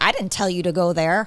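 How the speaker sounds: put-on passive-aggressive voice. Retelling what a prophetic person claimed God said: imitating passive aggressive God voice. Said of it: "I don't know that God talks like that".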